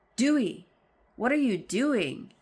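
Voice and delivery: stagey theatrical reading. Performing own script lines after offering a dramatic reading: dramatic reading. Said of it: "Would you like a dramatic reading of my lines?".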